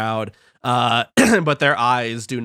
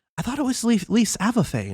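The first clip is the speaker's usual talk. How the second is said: gossipy, high-pitched, hushed half-whisper; 10 semitones higher than usual. A game narrator voices another onlooker's remark: half-whispering. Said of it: "you hear other whispers like".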